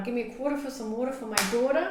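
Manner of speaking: rattled-off New York accent. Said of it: "No, that's New York".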